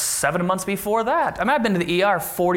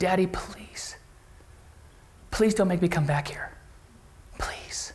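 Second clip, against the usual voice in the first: mock begging, pleading tone, quieter; 6 dB quieter than usual. A father retells what his son kept saying while carried to the car, imitating begging. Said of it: "He's begging".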